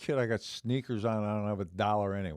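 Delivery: ordinary delivery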